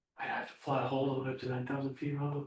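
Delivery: worried, daunted, scared student voice. Imitating students worried about the departure hold: imitating scared students. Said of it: "they get scared about it".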